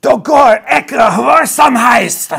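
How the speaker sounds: barking shout, top of lungs. A female giant shouts at the dragon, barking at the top of her lungs. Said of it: "just absolutely barks at the top of her lungs".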